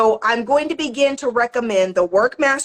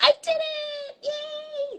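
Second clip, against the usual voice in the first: put-on very high, very slow, hushed little-girl voice; 8 dB quieter than usual. Signing off to viewers after finishing, sounding like a little girl. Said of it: "I sound like a little girl".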